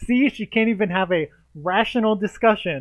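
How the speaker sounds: loud, high-pitched, mocking gloating laugh.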